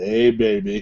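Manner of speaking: seductive, come-hither pillow-talk bedroom voice. Imitating how someone talked on a fishing date: imitating Joel's bedroom voice. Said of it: "he was using that bedroom with".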